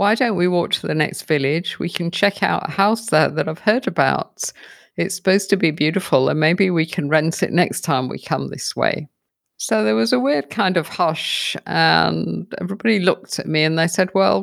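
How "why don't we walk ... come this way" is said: ordinary talk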